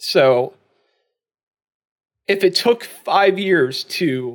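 heartfelt, emotional, moved delivery. Podcast host thanks someone who made the podcast better, getting emotional. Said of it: "I'm getting emotional saying this".

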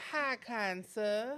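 put-on, drawn-out fake Southern drawl. Showing how people try to fake a Southern accent: fake Southern drawl. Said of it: "it's real long draw, like hi kind sir. Like, that way".

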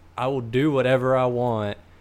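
plain

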